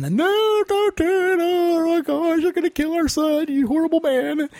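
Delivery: acted-out yelling at a very high pitch. Retelling a mother following the father up a mountain, retelling a yell. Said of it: "she's yelling".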